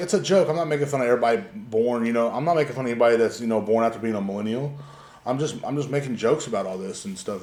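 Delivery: ordinary talk, nothing marked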